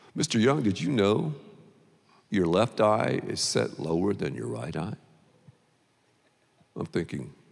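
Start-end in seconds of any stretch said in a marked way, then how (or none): 0.1-4.9 gentle, soft-spoken, quiet voice. Retelling an eye exam, quoting the doctor: imitating a doctor's soft voice. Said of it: "He talks in a soft voice".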